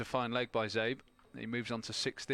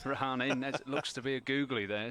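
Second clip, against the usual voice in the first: giggling and laughing through the words; 2 semitones higher than usual. Cricket commentator calling a delivery: giggling. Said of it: "Sorry, I'm giggling".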